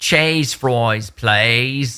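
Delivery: put-on Australian accent. Showing a three-word accent taken from a restaurant: put-on australian accent. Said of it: "I do a three-word Australian, uh, accent".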